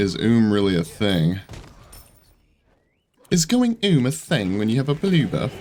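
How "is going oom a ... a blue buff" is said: sudden switch to a put-on British accent. Commentating a game match, the player slips into a put-on british accent. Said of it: "I just went all British or English".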